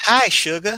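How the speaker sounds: fake Southern belle drawl, very high pitch. Joking after a chat message about a Southern Belle dialect: put-on Southern Belle accent. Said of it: "that's the wrong type of accent".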